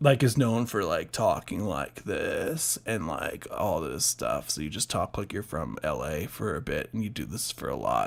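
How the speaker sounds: creaky LA-style vocal fry at the bottom. Speaker demonstrates the vocal fry used for screaming, LA-style vocal fry. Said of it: "you do this vocal fry thing".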